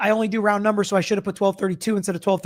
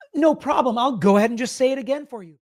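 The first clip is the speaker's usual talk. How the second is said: sweetly snide, overly polite, passive-aggressive tone; 3 semitones higher than usual. Acting out a back-and-forth between two smart people, overly polite, passive-aggressive. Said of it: "the most like passive aggressive back and forth".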